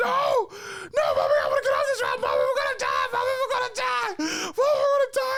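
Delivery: mock very high, rising, terrified shrieking. Speaker retells being on a ride with a loose restraint, retelling panicked screaming. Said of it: "I'm screaming the whole time".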